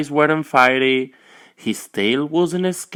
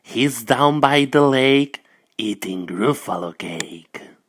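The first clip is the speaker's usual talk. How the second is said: sly storybook snake character voice; 4 semitones lower than usual. Reading a story aloud, the snake answers the Gruffalo's child in a snake voice. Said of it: "said the snake".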